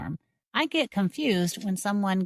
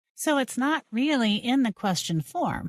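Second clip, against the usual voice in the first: ordinary talk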